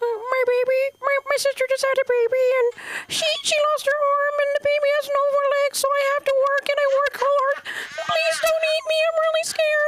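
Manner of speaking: very high, squeaky, tiny shrimp voice. Doing an impersonation of a scared shrimp begging not to be eaten: shrimp impersonation. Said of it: "That's my shrimp impersonation".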